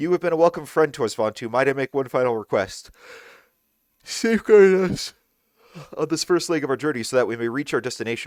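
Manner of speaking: yawning while speaking. Asking vontu for protection on the first leg of the journey, yawning while speaking. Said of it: "Why can I not stop yawning?".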